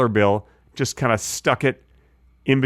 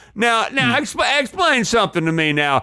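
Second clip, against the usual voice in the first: put-on very high Southern accent, sharp grilling tone; 9 semitones higher than usual. Cross-examining the other speaker as a mock attorney: playing a southern attorney. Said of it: "I should be an attorney".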